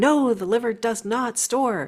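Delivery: mock agitated, excited, insistent tone. Imitating critics who protest about the liver: imitating people protesting excitedly. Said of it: "they jump up and down".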